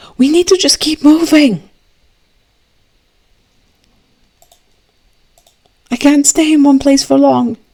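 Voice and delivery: very high, loud yelling. Voicing a fleeing character who yells back over her shoulder: yelling back while fleeing. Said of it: "and just yells back".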